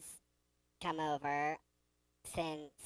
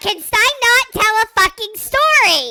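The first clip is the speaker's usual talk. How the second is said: very high, loud, squeaky mock outrage. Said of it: "You don't sound that threatening when you sound like that".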